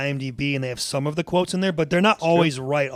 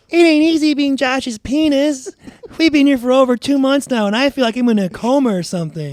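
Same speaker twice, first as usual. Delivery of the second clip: very high, squeaky little voice; 10 semitones higher, 8 dB louder than usual. Pretending to be another man's penis talking, in a squeaky high-pitched voice. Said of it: "Pretends to be Josh's dick with a squeaky, high-pitched voice".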